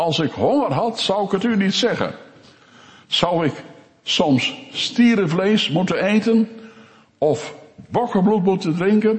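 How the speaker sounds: high, biting, wrathful, almost sarcastic tone. Quoting a divine rebuke to the people, mock near-sarcastic and wrathful. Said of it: "op het sarcastische af zegt".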